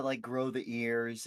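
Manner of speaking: ordinary talk, nothing marked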